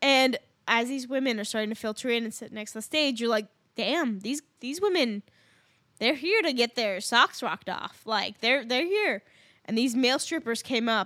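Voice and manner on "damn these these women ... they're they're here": ordinary delivery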